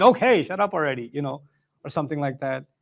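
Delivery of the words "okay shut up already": ordinary talk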